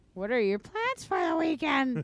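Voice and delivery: high, put-on motherly mom voice. Mid-conversation, the speaker suddenly asks a question: imitating their mom's voice. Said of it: "I had to get my mom voice out".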